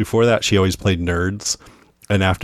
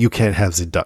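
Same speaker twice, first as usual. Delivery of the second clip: imitated French accent. Retelling a scene, quoting a fancy restaurant's host in a French accent. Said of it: "he speaks in a French accent".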